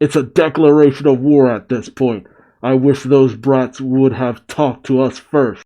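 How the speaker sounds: ordinary talk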